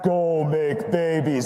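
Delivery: commanding, proclaiming voice like a deity. Speaker performing the first commandment for the audience, voice of God. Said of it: "Can we do the voice of God?".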